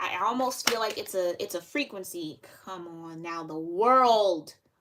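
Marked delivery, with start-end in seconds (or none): 3.4-4.5 loud, slow shout, word stretched long. A speaker announcing the World card, shouting. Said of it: "I do not mean to shout".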